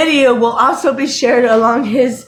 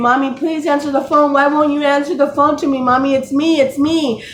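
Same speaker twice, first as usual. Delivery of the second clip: put-on tearful, pleading voice of a crying child; 3 semitones higher than usual. Retelling a daughter calling on the phone: imitating a crying daughter. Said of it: "her daughter's calling, crying, saying".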